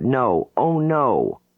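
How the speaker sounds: sudden high-pitched panicked cry. A client in deep hypnotic regression suddenly tenses up, crying out in panic. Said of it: "She cries out".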